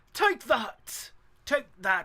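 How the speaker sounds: put-on lightly done, near-English accent. Quoting what he says in the clip, in an almost English accent. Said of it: "he is almost like an English accent".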